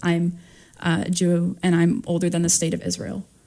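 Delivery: ordinary talk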